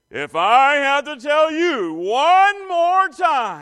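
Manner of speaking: very loud, swooping stern dad voice. Parent showing the voice used on kids reminded too many times, putting on the dad voice. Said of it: "that's when the dad voice shows up".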